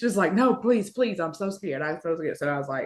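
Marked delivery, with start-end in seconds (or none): 0.3-2.4 mock frightened, high, scared pleading voice. Retelling how the caller begged to have someone else talk: imitating a scared coworker. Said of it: "she was scared to talk to".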